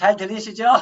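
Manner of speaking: speaking up loudly.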